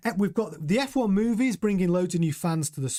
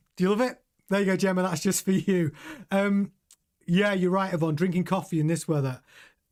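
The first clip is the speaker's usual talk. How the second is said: usual speaking voice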